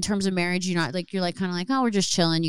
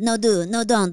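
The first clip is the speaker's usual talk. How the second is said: put-on Spanish accent, actor-like voice; 3 semitones higher, 3 dB louder than usual. Joking about a famous actor calling with a movie offer: Javier Bardem impression. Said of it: "It's a great Javier Bardem impression".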